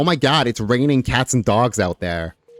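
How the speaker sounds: put-on American accent. Talking about the phrase raining cats and dogs, in a put-on American accent. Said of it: "that's my American accent".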